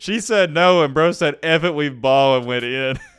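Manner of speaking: words broken up by laughing. Telling a story about a man who would not take no, laughing while talking. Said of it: "I'm sorry, I'm laughing".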